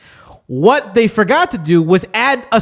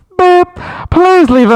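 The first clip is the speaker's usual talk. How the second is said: really loud, high, blaring answering-machine voice; 9 semitones higher, 5 dB louder than usual. Describing movie phone audio: imitating a very loud answering machine. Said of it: "it's mad loud".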